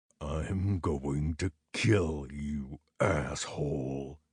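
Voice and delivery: very low, very slow, menacing growl. Narrating a bleeding man who stands up to face the narrator: low scary growl. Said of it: "he growled, his voice low and scary".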